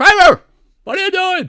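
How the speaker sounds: shrieking, high-pitched yell at full volume. Doing a self-described mediocre impression, calling out to Kramer: yelling Seinfeld impression. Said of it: "I guess that's a mediocre Seinfeld, but he's always kind of like has that yelling".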